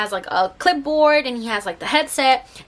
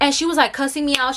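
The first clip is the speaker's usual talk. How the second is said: ordinary delivery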